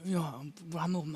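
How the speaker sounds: soft, murmured put-on voice. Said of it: "이렇게 얘기를 해요".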